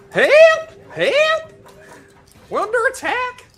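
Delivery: loud shouting. Voicing a fleeing enemy who runs for the open door: shouting for help.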